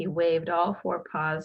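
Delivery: plain reading voice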